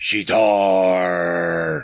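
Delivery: very deep, dropped, low voice. Retelling a movie's final scene, a woman turning to answer: very deep voice. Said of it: "in this very deep voice".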